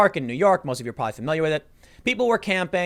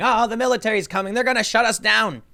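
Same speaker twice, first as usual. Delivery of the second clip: high, alarmed, panicked cry; 5 semitones higher than usual. Retelling how an old guy panicked at seeing soldiers, imitating his panic. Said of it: "this old guy started panicking".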